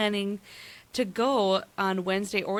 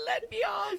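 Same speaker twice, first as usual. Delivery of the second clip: put-on shrill, very high, panicked scream; 12 semitones higher, 4 dB quieter than usual. Retelling a panic attack at the top of a Ferris wheel: imitating own screaming.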